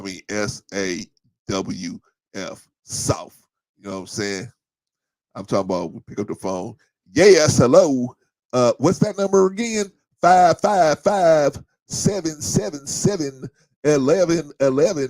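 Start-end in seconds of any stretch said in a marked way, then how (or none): 7.1-15.1 put-on very loud, high-pitched Southern accent. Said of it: "he had that accent and everything".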